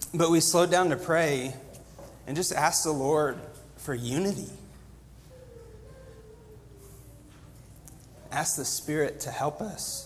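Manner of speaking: voice catching with emotion. Recounting how they slowed down to pray for guidance, choking up. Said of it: "Excuse me".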